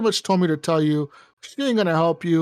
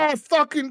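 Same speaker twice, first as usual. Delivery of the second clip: put-on angry druid-leader voice, higher; 10 semitones higher than usual. Retelling a game where the druid leader is stabbed: imitating her angry outburst. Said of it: "she gets all mad".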